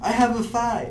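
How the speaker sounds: very loud, very high, excited enthusiastic cheer. After admitting too little enthusiasm, the speaker says the line with lively enthusiasm. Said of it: "I didn't say that with um, as much enthusiasm as uh, as I probably should. Maybe I should maybe I should try that again".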